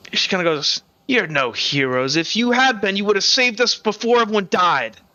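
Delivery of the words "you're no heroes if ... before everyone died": sneering, scornful, contemptuous tone. Narrator voicing a young woman who scorns the heroes, sneering. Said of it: "she kind of looks at you with like a sneer".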